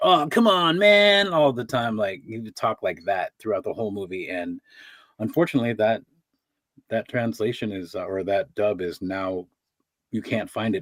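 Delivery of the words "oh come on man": very slow, very high surfer-dude drawl. Describing how a character talked in a movie dub, doing a surfer voice impression. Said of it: "His voice was like a surfer".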